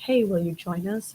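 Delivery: ordinary delivery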